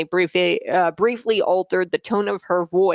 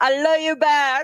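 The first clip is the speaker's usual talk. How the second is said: really bad fake Latin American accent, pitched up; 8 semitones higher than usual. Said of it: "that's that's really bad".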